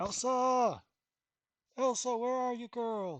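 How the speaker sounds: very high, drawn-out call as from afar. Running a game, voicing a man heard in the distance, distant calling out. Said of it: "a voice in the distance calling out".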